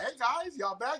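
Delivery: high dog voice. Retelling what the dog told in the video: voicing the dog. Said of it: "roughing moms up in the dog like".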